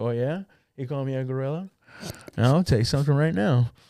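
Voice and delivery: put-on flirty tone. Acting out the reply the speaker imagines she gave, imitating flirty energy. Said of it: "with flirty energy".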